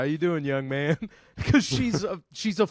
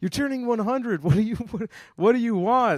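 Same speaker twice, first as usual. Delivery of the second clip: play-acted, high, overly jovial, too cheerful motherly voice; 8 semitones higher than usual. Retelling a mother's phone call to a great aunt: imitating mom, too jovial. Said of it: "I made my mom sound too jovial there".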